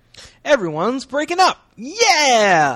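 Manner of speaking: high, loud mock cheer.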